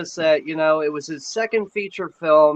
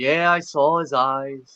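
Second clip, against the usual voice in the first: slow, easy, unbothered, laid-back, drawn-out delivery. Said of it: "Atkins is like".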